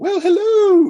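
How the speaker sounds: very high, loud, shrill, belting put-on woman's voice. Explaining how a male narrator should not do female voices, fake Mrs. Doubtfire voice. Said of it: "talk like Missus Doubtfire".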